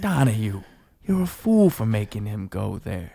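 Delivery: slow, sorrowful, heavy-hearted delivery. Performing the same line in another emotion: sad. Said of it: "maybe, like, sad".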